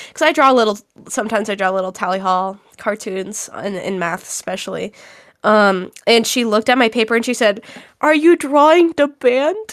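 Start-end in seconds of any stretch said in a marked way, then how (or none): 8.0-9.7 put-on babyish voice, higher and slower. Speaker retells what she asked about the drawings in math, in a baby voice. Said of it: "In, like, a baby voice".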